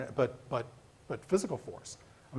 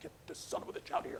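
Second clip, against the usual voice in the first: mock screaming, quieter; 5 dB louder than usual. Recounting an incident at a campaign event, acting out a man shouting an order to get someone removed, imitating someone screaming. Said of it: "this just screaming at him".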